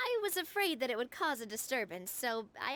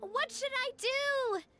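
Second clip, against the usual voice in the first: high, slow, stretched-out desperate yell. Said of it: "someone yelling things like".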